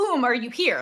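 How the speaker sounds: put-on, slightly alarmed, quick, panicked delivery. Retelling how a character asks whether someone is there: imitating a panicked shout. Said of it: "a little panicked when she says this and she shouts it".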